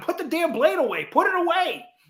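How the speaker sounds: high-pitched yelling, carrying far. Speaker recounting yelling at one of the guys, retelling a yell. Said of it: "I'm yelling at him".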